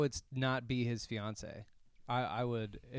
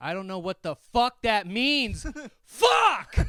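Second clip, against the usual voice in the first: very high, very loud, swinging angry scream; 11 semitones higher, 10 dB louder than usual. Retelling a biker's reaction to an old man yelling at him, retelling a screamed curse. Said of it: "Like screams the word fuck".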